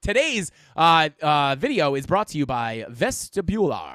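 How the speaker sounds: low, slow radio-host announcer voice. Practicing their radio voice for people in the chat: radio voice. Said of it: "I am practicing my radio voice".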